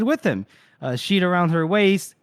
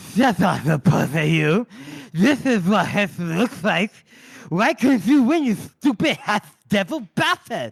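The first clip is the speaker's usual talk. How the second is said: voice sounding like a smashed-in, caved-in face. Recounting a dream scene where Bethod speaks through a smashed-in face. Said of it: "because his face is smashed in".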